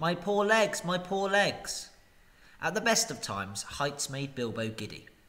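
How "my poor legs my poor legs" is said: pitched-up, aching groan. Carried through the sky with someone clinging to his ankles, he answers: groaning. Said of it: "But Dorry groaned".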